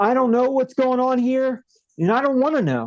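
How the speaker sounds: panicky, high outburst. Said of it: "he, like, panics and he goes".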